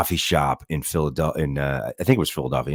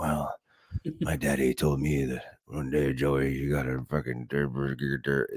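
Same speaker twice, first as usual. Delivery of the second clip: rambling half-whisper that stalls and repeats, hushed; 6 dB quieter than usual. Mocking a politician's quiet speaking style: imitating Biden's half-whisper mode. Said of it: "whisper mode and he's like".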